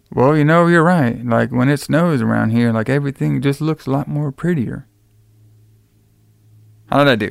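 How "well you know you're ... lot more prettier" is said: put-on level, uninflected, flat monotone delivery. Imitating Mike's dialogue about the snow, in a flat monotone. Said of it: "I'm trying to do like some of his dialogue. He just had this very, like, monotone".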